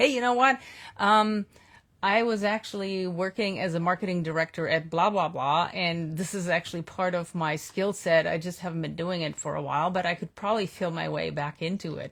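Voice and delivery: ordinary delivery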